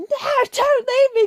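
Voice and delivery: high, full, desperate, pleading scream. Showing how Eddie should have reacted when Venom died: full screaming plea. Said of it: "he just like full screaming".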